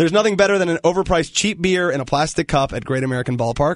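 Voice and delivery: ordinary talk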